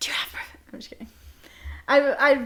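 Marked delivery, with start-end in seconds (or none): 0.0-0.6 theatrical stage whisper, loud enough for all to hear. Pretending to quietly ask a friend about perfume: stage whisper. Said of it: "you gotta stage whisper".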